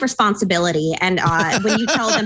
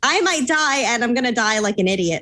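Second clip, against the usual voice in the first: ordinary talk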